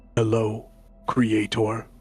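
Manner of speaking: deep, low, rumbling construct voice. Voicing a clockwork construct that turns its head to greet its creator, deep rumbling voice. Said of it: "The deep voice, a rumble".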